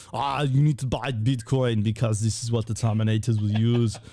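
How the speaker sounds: action-movie cyborg voice. Telling what you were thinking in your head, in an Arnold Schwarzenegger voice. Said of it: "Arnold Schwarzenegger like voice".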